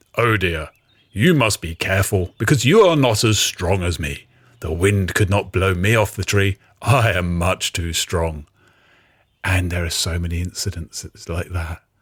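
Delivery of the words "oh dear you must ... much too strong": pompous, grand, self-important storybook character voice. Describing a story's characters, speaking as Strongwing in Strongwing character voice. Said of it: "This is how I imagine Strongwing talks".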